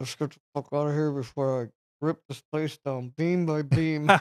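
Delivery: acted talking through clenched teeth. Retelling what a friend said leaving a club, imitating talking through clenched teeth. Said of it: "with his teeth clenched".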